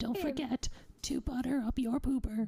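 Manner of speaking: hushed whisper. Speaking to listeners going to sleep, whispering. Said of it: "It's very hard to whisper in this voice".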